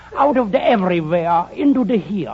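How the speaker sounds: put-on speaking with a German accent. Answering where they came from, in a German accent. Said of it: "where did you get that German accent".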